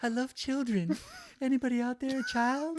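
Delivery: very high, swooping sing-song voice. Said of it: "Sounds like [name]".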